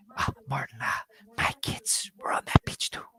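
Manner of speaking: hushed, awkward, squirming, uneasy whisper. Quoting the mayor seeking common ground with Brody: imitating a squirming mayor. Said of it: "the mirror kind of squirming".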